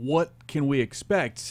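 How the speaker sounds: usual speaking voice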